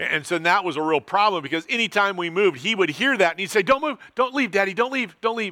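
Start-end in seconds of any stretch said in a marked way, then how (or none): 3.6-5.5 put-on small, cute two-year-old voice, pitched up. A father retelling his two-year-old son pleading at bedtime, cute little two-year-old voice. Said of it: "in his cute little 2-year-old voice".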